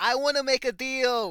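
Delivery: high, loud, shouted calling-out yell. In a game scene, a character clenches his fist, yelling out. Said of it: "he just yells out".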